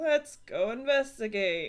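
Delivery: grouchy, reluctant, grudging grumble. Repeating the character's line as the character would: grumbling. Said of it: "She's gonna actually say it like that too".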